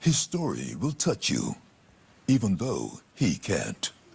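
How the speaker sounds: deep trailer narrator voice. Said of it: "I want that to be the voice in my head".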